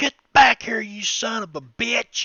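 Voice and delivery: yelling, angry, drawn-out holler. Voicing a gambler chasing a fleeing player: angry shout as NPC. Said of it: "like that".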